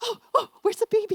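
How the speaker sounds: put-on very high, loud, gushing grandma-style thrilled excitement. Speaker retells mom greeting the baby at the door, imitating mom's excitement. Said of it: "my mom's just so excited".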